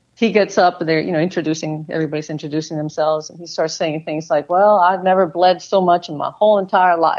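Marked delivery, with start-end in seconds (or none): 4.5-7.2 put-on Southern Mississippi accent, natural delivery. Retelling what Mike Brown said while everyone introduced themselves, imitating Mike Brown's Mississippi accent. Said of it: "with his Mississippi accent".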